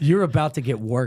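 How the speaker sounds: ordinary talk, nothing marked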